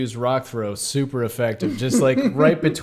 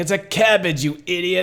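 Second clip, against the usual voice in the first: mock crowing, high, gleeful, triumphant gloating; 5 semitones higher than usual. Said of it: "He's so excited that Geralt was wrong".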